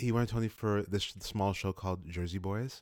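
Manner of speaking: soft public-radio announcer reading voice. Explaining an actor's Tony nomination to the other speaker, in NPR voice. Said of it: "why'd you suddenly go into your NPR voice".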